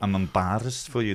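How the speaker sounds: put-on Scottish accent. Speaker quotes a line the way Hannah would say it, in Hannah's Scottish accent. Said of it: "That's her Scottish accent".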